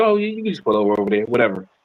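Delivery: nonchalant tone. Retelling a video, imitating the girl who didn't care: imitating someone not caring. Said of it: "She just like".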